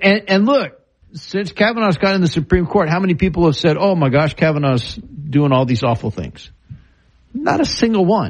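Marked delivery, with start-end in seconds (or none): none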